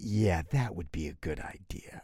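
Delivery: acted, low, condescending, humoring tone. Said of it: "really patronizingly".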